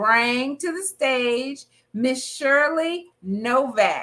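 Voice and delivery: slow, light touch of country accent. Bringing a guest to the stage: little country accent. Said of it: "you hear my little country accent".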